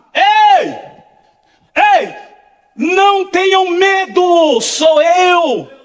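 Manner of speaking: slow, drawn-out, put-on distant shout. Retelling a voice calling to frightened disciples from the sea: imitating a shout. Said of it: "o grito lá do meio do mar".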